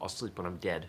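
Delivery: ordinary delivery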